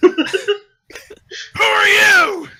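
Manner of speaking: startled, very high-pitched screaming cry. The storyteller voices the dwarfs screaming back as the players burst from the brush. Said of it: "And they start screaming back".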